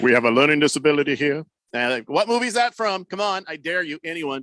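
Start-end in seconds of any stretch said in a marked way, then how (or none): 0.0-1.4 put-on deep booming voice. Quoting a movie line for others to guess: James Earl Jones voice. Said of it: "I never tried to do that voice before".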